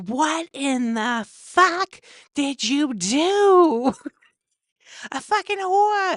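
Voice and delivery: very high, loud, slow, drawn-out climbing yell. Retelling how her friend's mom reacted to her daughter's shirt, imitating someone yelling. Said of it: "And she's yelling it".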